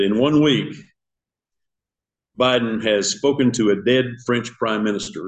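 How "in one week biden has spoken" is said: plain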